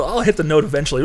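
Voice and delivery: ordinary talk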